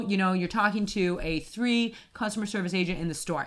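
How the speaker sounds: ordinary talk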